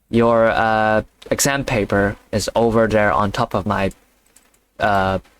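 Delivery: plain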